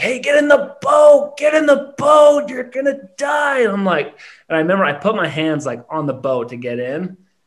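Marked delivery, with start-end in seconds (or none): 0.0-3.6 mock yell, much higher, louder and slower. Recalling a guy telling them to get in the boat, retelling a guy's yell. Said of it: "this guy is like yelling at me like".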